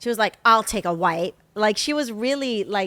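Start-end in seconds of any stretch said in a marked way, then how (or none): 0.4-1.4 mock snippy, put-out, loud, pissy tone. Retelling what a lady on a flight said: imitating a pissy tone. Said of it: "being pissy".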